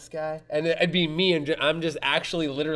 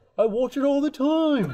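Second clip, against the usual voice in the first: high-pitched put-on British accent; 11 semitones higher, 3 dB louder than usual. Retelling a man he met who watches The Deviant: British accent. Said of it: "British accent".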